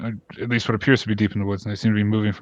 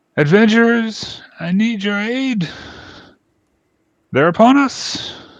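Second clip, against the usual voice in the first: very high-pitched, loud shout; 12 semitones higher, 5 dB louder than usual. Narrator voicing Freya calling the adventurers amid screams in the village, Freya's pitched yell. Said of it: "the pitched voice of Freya yell out".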